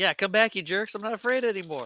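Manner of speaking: very high shrieked defiance. Recounting the scene where Kevin walks out his front door: retelling Kevin's defiant scream. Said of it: "he starts screaming that into the night".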